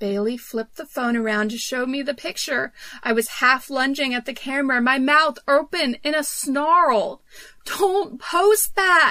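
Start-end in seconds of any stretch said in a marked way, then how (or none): 7.7-9.1 sudden, involuntary high yelp. Shown a photo on someone's phone, the narrator blurts out, yelping. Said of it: "I yelped before I could stop myself".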